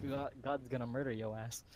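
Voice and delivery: ordinary talk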